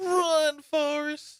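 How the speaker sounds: high, slow, drawn-out cry. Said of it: "what's the movie?".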